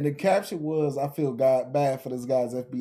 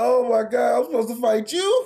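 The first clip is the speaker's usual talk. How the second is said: mock tearful sobbing, high and loud crying voice; 10 semitones higher, 7 dB louder than usual. Retelling how an anime character reacted to a fight: imitating a character crying. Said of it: "He was the crying, too".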